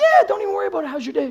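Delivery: very high, quick, meek, gentle voice. A sales trainer contrasts lion mode with lamb mode for the group, lamb-mode voice. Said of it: "Lamb mode is like".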